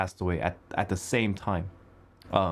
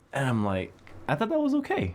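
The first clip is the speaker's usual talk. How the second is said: ordinary delivery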